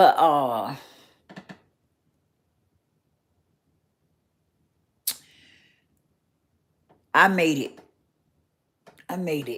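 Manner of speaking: moved, heartfelt, emotional voice. Telling the audience he made it when many others didn't, getting emotional. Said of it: "Get a little emotional".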